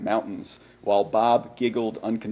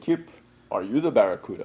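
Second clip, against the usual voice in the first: put-on Russian accent. Quoting a Russian friend's question about the barracuda: bad imitation of Sergei. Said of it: "I don't do a good imitation".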